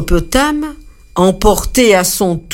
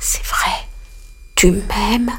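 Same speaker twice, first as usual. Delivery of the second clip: murmuring, low and soft; 6 dB quieter than usual. Narrator reads the ant answering the dove, murmuring. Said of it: "la fourmi murmura".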